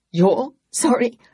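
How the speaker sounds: strangled outburst. Ed answers Flora's apology in a strangled, high voice. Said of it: "His voice was strangled and high".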